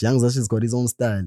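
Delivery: ordinary delivery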